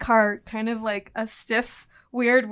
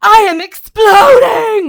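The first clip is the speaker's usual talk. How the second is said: shrill, blaring, very loud, high, put-on Italian accent; 10 semitones higher, 15 dB louder than usual. Retelling what the driver suddenly said, imitating his italian accent. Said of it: "in whatever his Italian accent was".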